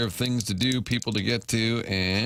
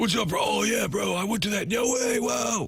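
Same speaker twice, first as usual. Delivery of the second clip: laid-back bro voice, very high pitch, slow; 11 semitones higher than usual. Imitating how Cam sounds: imitating Cam's bro tone. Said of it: "Cam sounds like that".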